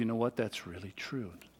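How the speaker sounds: very quiet, hushed, low, softly spoken voice. Retelling how a father kneels down to talk to his little boy, very quiet voice. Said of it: "Speaking in a very quiet voice".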